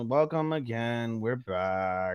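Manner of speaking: depressed, very slow drone, "back" drawn out. Imitating the other speaker's episode opening, mocking a depressing tone. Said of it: "Why you sound so, like".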